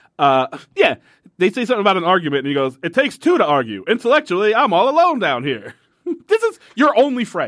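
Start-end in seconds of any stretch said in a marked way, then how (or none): 2.9-7.5 put-on old-time 1930s newsreel reporter patter. Retelling a man's lines to a co-host, speaker quotes him in a 1930s reporter voice. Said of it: "30s reporter voice".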